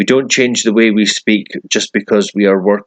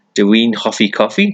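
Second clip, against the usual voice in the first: rising pitch on final word coffee. Welsh lesson on forming questions by tone, rising pitch on coffee. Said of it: "lifting our tone of voice at the end of the sentence".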